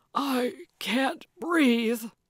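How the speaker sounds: put-on wheezing, out-of-air, breathless voice. Man pinned under a woman who fell on top of him: wheezing. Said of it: "he wheezed".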